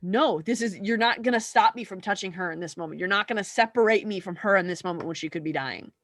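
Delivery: ordinary talk, nothing marked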